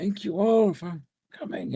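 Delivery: thin, almost frail, weedy high voice. Narrator voicing a man greeting the group in his office, weedy frail high voice. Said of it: "surprisingly weedy, almost frail sounding voice".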